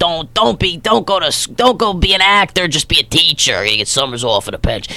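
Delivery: imitated New Jersey accent. Quoting their mother while telling of family, doing her whole Jersey accent. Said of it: "I do the whole Jersey thing".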